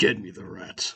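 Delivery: very low, grumbly, rumbling voice. Game master voicing a character's overheard order, very low and grumbly. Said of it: "in a very low and grumbly voice".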